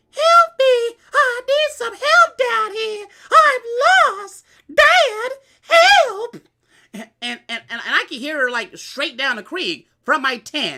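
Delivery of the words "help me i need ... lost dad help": very high, very loud, slow, drawn-out shrill pleading. Retelling a girl's voice calling from the creek: imitating a voice pleading for help. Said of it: "a voice pleading for help".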